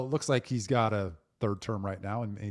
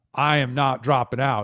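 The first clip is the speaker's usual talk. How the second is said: loud, mad, play-acted angry voice; 4 semitones higher, 10 dB louder than usual. Retell what Joe Biden told his campaign staff on a phone call, imitating Joe Biden's mad voice. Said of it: "in his mad voice".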